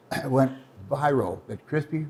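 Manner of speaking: ordinary talk, nothing marked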